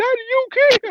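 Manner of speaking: put-on very high-pitched, tiny little kid voice. Retelling falling over and his son checking on him, imitating his son's little voice. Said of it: "my son had that little voice".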